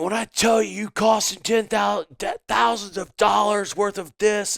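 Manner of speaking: imitated scream. Retelling how the man he did security for screamed at him, retelling a scream. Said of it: "He's screaming at me".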